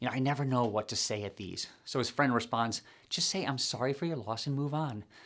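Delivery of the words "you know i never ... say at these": put-on hushed whisper, much quieter. A man at a funeral confides in his friend, retelling a whisper. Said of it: "he whispers".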